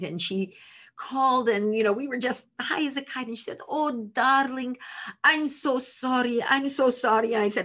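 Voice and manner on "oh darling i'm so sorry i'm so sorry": put-on Hungarian accent, put on. Retelling their mother's words on a phone call, imitating her hungarian accent. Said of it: "a very delightful Hungarian accent".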